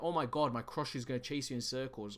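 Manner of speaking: ordinary talk, nothing marked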